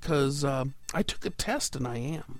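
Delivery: normal talking voice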